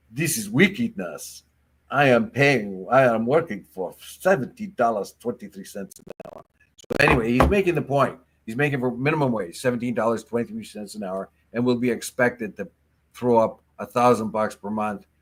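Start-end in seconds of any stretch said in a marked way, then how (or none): 0.2-6.5 put-on Jamaican accent laid on thick. A speaker quotes a minimum-wage worker on his weekly tax, in a thick Jamaican accent. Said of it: "in his thick Jamaican accent".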